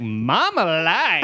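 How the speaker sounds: put-on slow, slurred, sloppy drunk voice, dragged out.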